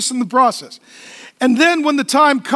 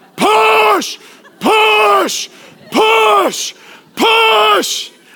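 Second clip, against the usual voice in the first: very slow, drawn-out, bellowing coach-style yell; 8 semitones higher, 3 dB louder than usual. Imitating how they tell women to push during birth: yelling like a football coach. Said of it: "They say it like a high school football coach yelling at an offensive line".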